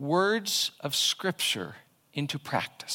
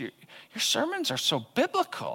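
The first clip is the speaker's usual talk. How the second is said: mock-surprised voice with a hint of surprise, higher; 6 semitones higher than usual. A preacher repeats what listeners tell him about his sermons, mimicking a surprised compliment. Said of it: "a hint of surprise in the tone of their voice".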